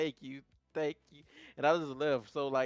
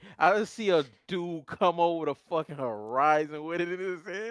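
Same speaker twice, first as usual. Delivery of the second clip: ordinary talk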